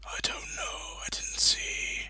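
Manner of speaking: hoarse, whispering corpse voice.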